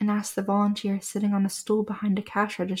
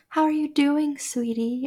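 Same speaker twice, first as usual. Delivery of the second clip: cloying, sickly-sweet, condescending, patronizing syrupy voice; 6 semitones higher than usual. Narrating a story, the narrator voices their own greeting to him, cloying and condescending. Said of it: "I asked, cloying".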